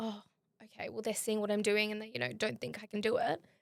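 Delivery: normal talking voice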